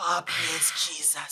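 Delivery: put-on very quiet sighing Caribbean grandmother voice. Describing a habit after sipping hot coffee, elderly caribbean woman sigh. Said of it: "I'm turning into an elderly Caribbean woman".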